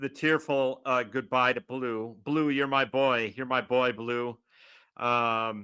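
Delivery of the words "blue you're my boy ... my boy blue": normal talking voice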